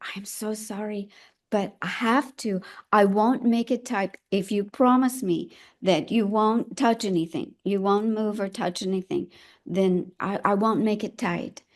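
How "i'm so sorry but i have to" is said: hushed stage whisper, murmured close to the ear. Retelling what a nurse half-whispered in the speaker's ear, retelling a half-whisper. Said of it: "whisper in my ear".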